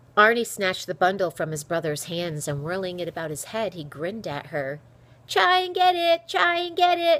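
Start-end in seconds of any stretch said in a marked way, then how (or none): 5.3-7.2 very high, drawn-out taunting shriek. Arnie, having snatched the bundle from his brother, turns to her, shrieking. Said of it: "He shrieked".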